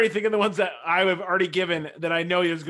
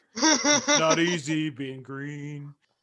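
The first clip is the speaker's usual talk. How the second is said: slow, mature frog puppet voice. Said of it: "Like a mature Kermit the Frog".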